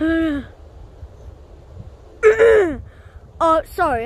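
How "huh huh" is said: caveman-like voice. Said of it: "I was speaking my caveman voice".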